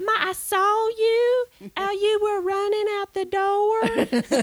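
put-on high-pitched, slow Southern accent. Imitating a child actor's line from the end of the film: Barry with a Southern accent. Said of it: "you can hear he has a Southern accent".

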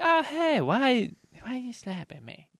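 confused, just-woken woman voice. Retelling how a woman woken by slaps reacted, imitating Renee. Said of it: "That sounded just like Renee".

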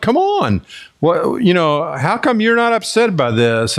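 mock, high, panicked, alarmed servant's outcry. Retelling the Bible story of Elisha's panicking servant, acting out a panicked scream. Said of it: "he's screaming at Elisha".

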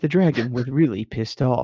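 nature documentary narrator voice, wildlife film voiceover style. Repeating the game master's line about the dragon: David Attenborough voice. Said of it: "I heard that in David Attenborough's voice".

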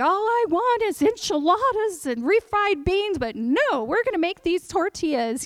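mock weepy, high, tearful grumble. Speaker recounts making tortillas, retelling own tearful complaint. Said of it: "So I'm crying, and I'm like".

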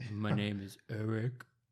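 slow, fake masculine straight bro voice. Introducing oneself as co-host on restarted podcast: put-on straight masc voice. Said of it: "let me get my, my straight, my mask voice".

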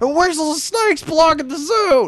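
shrill, very high, loud screaming. Retelling a YouTube clip where Rob Ford screams at council: imitating Rob Ford screaming. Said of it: "he just starts screaming at Mel Lastman".

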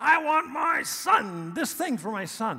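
very loud, very high, unrestrained, drawn-out shout. Retelling praying alone in the car for a son: imitating own shouting. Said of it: "I find myself just shouting".

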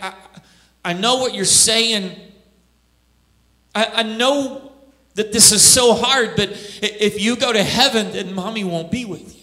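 tearful, weeping, crying voice. Retelling a mother's reply to her daughter: imitating a crying mother. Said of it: "that mom began to cry".

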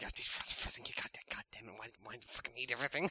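put-on angry muttering. Acting out an embarrassed character stomping off: Joe muttering under his breath. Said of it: "Just muttering in his breath".

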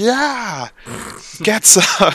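very high, swooping, whooping, hollering cheer. Voicing a player character cheering after setting an insect on fire: yelling and whooping in character. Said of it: "yelling and screaming and hooping and hollering".

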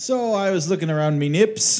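put-on high Irish accent. Explaining on a recording that there was no time for the liquor store, in a put-on irish accent. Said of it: "when you say it with an Irish accent".

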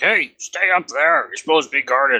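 shouting, projected upward from below. Voicing a guard below a rope ladder: shouting up from below. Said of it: "someone shouts up".

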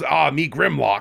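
cutesy caveman voice, creaky and croaking. Retelling how a movie's little T-Rex talks: cutesy caveman Grimlock voice. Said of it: "a cutesy little T-Rex that goes".

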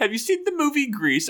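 very high, attempted, put-on Australian accent. Speaker quotes a woman from Australia, in an attempted Australian accent. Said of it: "I tried her accent".

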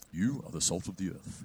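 put-on stern, strange, breathy whisper. Imitating how Jesus is often portrayed, in a stern, strange Jesus voice. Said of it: "a stern guy who speaks with a strange voice".

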